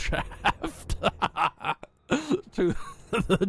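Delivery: slow, drawn-out giggle through the word.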